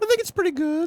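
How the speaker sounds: put-on falsetto, pitched very high. Asked by the host how their high-pitched voice is, answering in a high-pitched voice. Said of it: "And how is your high-pitched voice".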